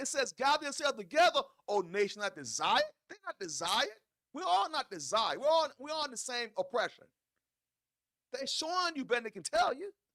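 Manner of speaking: high, fervent, fired-up, passionate yelling. Explaining a scripture passage to a listener, yelling passionately. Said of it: "Excuse me for yelling".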